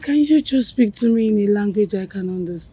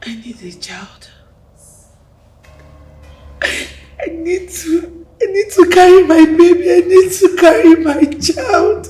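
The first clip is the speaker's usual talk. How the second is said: loud, high, tearful weeping delivery; 9 semitones higher, 6 dB louder than usual. Pleading with a partner for a child, crying. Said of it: "Why are you still crying?".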